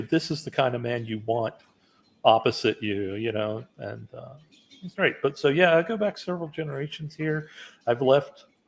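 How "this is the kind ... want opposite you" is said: ordinary delivery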